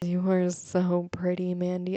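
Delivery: mock drunk voice with slurred words. Retelling a drunk guy's voice message from a house party: imitating drunk slurred speech. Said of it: "obviously slurring his speech".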